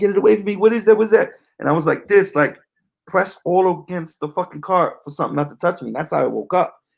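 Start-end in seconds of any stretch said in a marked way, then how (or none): 0.0-1.3 acted-out panicked, terrified screaming, high-pitched. Retelling waking up from a nightmare in a car: retelling own terrified screaming. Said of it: "fucking screaming".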